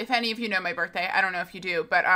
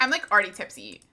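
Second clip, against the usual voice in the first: ordinary delivery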